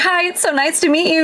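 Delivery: mock thrilled, eager, high-pitched excited voice. Retelling meeting an actor at a con: retelling excited greeting. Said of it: "Ben could tell that I was that excited".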